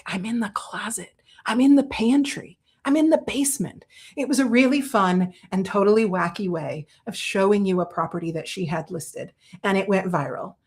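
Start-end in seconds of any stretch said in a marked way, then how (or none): 0.1-3.9 whispering. Retelling a friend's viral hide-and-seek video: imitating someone whispering. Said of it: "she's whispering and she's like".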